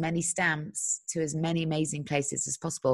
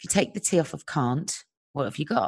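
plain

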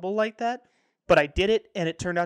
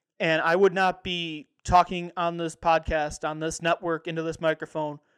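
ordinary talk

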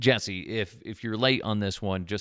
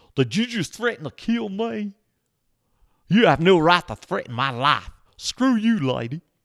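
bad, off-target fake Southern accent, raised and high; 9 semitones higher, 6 dB louder than usual. Retelling an employee shouting at one of the speaker's managers; bad Southern accent. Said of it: "That's not even Southern".

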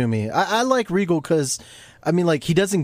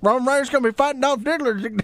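clumsy, bad ringside announcer voice, a bit higher; 8 semitones higher than usual. Announcing a wrestling match: Jim Ross voice. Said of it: "I think I can do a Jim Ross voice".

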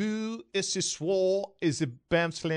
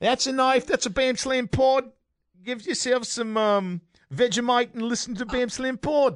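fake Australian accent, pitched up; 6 semitones higher than usual. Joining others' bit about kangaroos and vegemite: put-on australian accent. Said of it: "Australian accents".

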